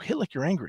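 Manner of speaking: whispered. Retelling advice once whispered to the kid about hitting: retelling a whisper. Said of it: "I whispered to him".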